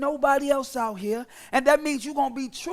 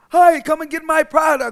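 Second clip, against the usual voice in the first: fake salesy on-camera voice, louder; 2 semitones higher, 8 dB louder than usual. Mocking how people change their voice on social media: put-on on-camera voice. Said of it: "they whole voice change".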